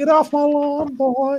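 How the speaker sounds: put-on high-pitched, creepy old man voice. Answering a request to say the line in Herbert's voice, doing a Herbert voice. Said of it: "Can anyone do that like in Herbert Pervert voice?".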